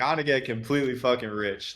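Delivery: put-on American Southern accent. Quoting a mastermind speaker who shits on virtue signalers: imitating Jeremy Haynes's Southern accent. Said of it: "in his Southern accent".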